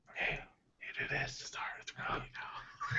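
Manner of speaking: soft unvoiced whisper.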